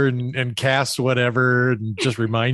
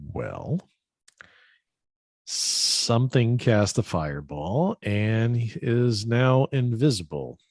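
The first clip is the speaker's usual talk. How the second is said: quiet, hushed tone; 4 dB quieter than usual. After he walks away, turning to the two of you, in a hushed tone. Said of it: "in a hushed tone and go".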